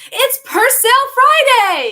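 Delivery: very high, very loud, booming, swooping hype delivery. Showing how she starts her videos, loud video intro. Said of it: "just talk a little bit louder".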